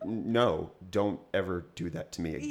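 ordinary delivery

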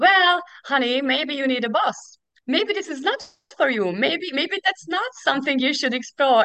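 dry, sarcastic dad voice. Retelling what their dad said about their doubts, mock-sarcastic. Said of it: "who sarcastically is telling you".

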